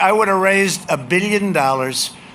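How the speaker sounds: usual speaking voice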